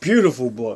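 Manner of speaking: choked-up voice catching with emotion. Looking through a collection of key books, getting choked up. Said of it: "I'm getting choked up".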